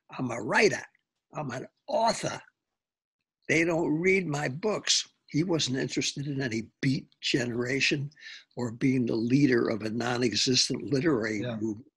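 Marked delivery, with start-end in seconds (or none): 0.2-5.1 put-on Lowell, Massachusetts accent. Retelling what a famous writer friend told him over and over, in a Lowell accent. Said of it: "with that Lowell accent".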